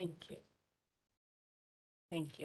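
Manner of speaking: crying, barely above a hush, very soft and quick. Speaker begins remarks on Nicola's behalf after being introduced: crying while speaking. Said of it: "I'm already crying".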